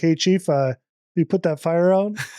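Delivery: very calm, dead-calm, unruffled, unbothered voice. Retelling how a man spoke to the chief during a boat fire, imitating a very calm voice. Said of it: "in like the calmest voice".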